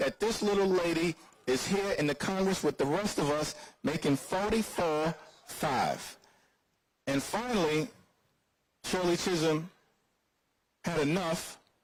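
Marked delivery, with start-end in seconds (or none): none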